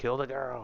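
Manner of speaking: high-pitched, fast screaming delivery. Recounting how one man screamed orders at another, retelling a screamed order. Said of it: "He screamed at him".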